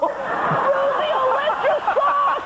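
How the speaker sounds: high, slow mock enthusiast voice.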